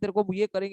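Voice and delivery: normal talking voice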